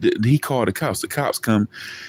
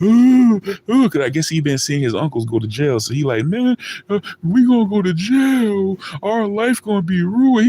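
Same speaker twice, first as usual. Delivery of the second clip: put-on crying voice, higher; 9 semitones higher than usual. Retelling a scared friend's words: imitating a crying friend. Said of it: "this dude crying".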